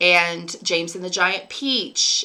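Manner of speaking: ordinary delivery, nothing marked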